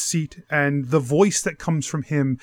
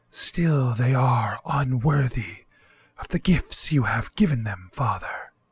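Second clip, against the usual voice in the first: wind-like whispery voice; 2 semitones lower than usual. A game master voices the Green Man speaking to Father: whisper like wind. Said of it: "who is covered head to toe in leaves and vines. From your stories, you believe this is the Green Man. / who is covered head to toe in leaves and vines. / which is a man, / and the voice that comes fro".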